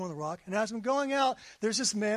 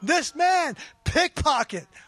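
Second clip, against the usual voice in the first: loud booming voice, higher and slower; 6 semitones higher, 6 dB louder than usual. Retelling what a man following you kept saying, in a booming voice. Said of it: "booming voice, louder than Dave's".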